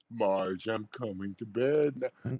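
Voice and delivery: cartoon father impression. Reminded of an old impression he used to do, speaker does Homer Simpson impression. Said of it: "you used to do the impression where you're like".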